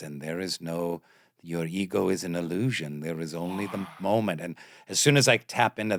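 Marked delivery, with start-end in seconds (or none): 0.0-4.4 put-on Austrian accent, lower and quieter. Imitating an audiobook author reading his book: Eckhart Tolle voice. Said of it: "he has this weird Austrian accent".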